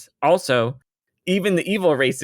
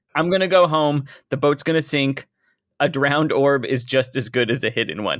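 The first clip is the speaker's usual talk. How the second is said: ordinary talk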